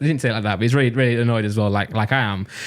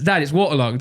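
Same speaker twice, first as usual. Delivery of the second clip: ordinary talk, nothing marked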